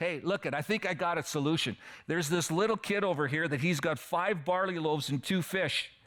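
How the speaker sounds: put-on, mocking, teasing, joking sarcastic tone. Retelling Andrew bringing a boy's food to Jesus: imitating Andrew, mocking and sarcastic. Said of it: "in a mocking, kind of joking, sarcastic".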